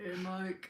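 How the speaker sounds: put-on deep voice. Asking whether to talk deeper too when greeting mike: put-on deep voice. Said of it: "Am I supposed to talk deeper too when I see Mike?".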